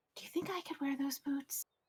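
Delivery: hushed, whispering voice. Turning to two companions in character and asking quietly: whispering. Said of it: "kind of whisper".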